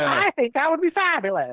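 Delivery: put-on very high, swooping old-movie transatlantic drawl. Imitating how women talked in old movies: imitating women in old movies. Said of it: "the way all the women talked in those movies".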